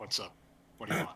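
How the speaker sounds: low, deep-pitched voice. Voicing a crow speaking telepathically to the players: deep telepathic voice. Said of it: "a deep telepathic voice saying".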